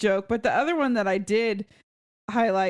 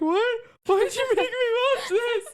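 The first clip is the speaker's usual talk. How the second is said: very high, tearful, crying whine, acted out. Retelling complaining to a coworker about a sad documentary: imitating own tearful complaint. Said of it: "I had tears running down my face".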